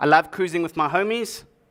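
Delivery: ordinary delivery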